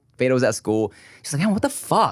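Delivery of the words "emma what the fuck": exasperated, fed-up, frustrated, higher-pitched outburst. Retelling what a partner said at home: imitating someone frustrated. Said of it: "She was frustrated about something".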